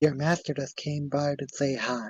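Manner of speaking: hushed, close half-whisper. A village character half-whispers into another character's ear so no one else hears, half-whispering. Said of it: "he whispers in in Brewer's ear so no one else can hear".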